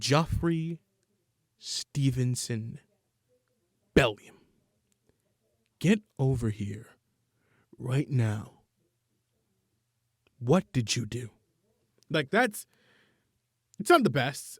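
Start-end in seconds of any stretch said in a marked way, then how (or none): 0.0-11.3 acted angry-mother voice, controlled, deliberate, slow, calm. Acting out a mother calling her child over: imitating an angry mother, not yelling. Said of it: "she's angry, but she's not yelling".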